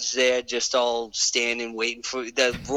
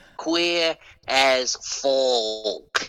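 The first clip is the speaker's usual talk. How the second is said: very slow, careful, deliberate enunciation. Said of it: "I gotta be careful how I say it".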